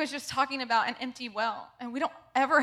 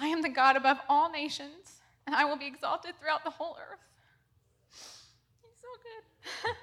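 tearful, crying a little; 3 semitones higher than usual. Speaker reading a passage aloud to listeners, tearful. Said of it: "I'm a bit of a crier".

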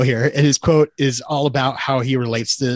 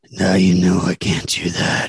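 very breathy, airy delivery; 7 semitones lower than usual. Acting out a film line reading as Dom, breathy Vin Diesel voice. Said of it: "he's very breathy and he's like".

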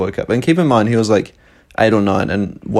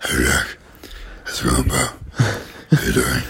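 mock deep voice, lower and quieter; 9 semitones lower, 5 dB quieter than usual. Imitating a little brother greeting jack: imitating brother's deep voice. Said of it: "show off his deep voice".

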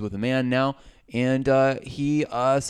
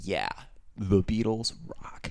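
sincere, earnest delivery; 4 semitones lower, 5 dB quieter than usual. Retelling what the podium guy says about the beatles: imitating the podium guy. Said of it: "And so he goes".

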